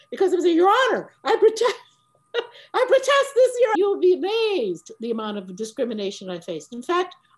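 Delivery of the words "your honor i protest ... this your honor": raised voice, loud and rising to high pitch. Retelling protesting to a judge in court: imitating own raised voice. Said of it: "if I raised my voice to the judge".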